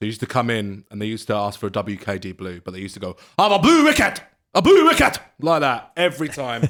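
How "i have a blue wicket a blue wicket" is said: booming, high-pitched Scottish soldier voice. Retelling how soldiers in a club ordered a drink: imitating Scottish soldiers. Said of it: "that was a good impression".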